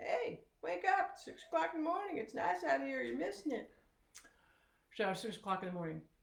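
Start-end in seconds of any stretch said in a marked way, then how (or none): 0.0-3.7 noisy, high, clamoring bird chatter. Retelling how the birds woke everyone at six: imitating clamoring birds. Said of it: "they were all clamoring outside the window".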